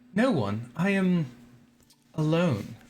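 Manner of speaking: stately, queenly, regal woman's voice. Narrating a game scene, answering a player's question, in a noble, regal female voice. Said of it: "you hear a female voice, very noble and regal sounding".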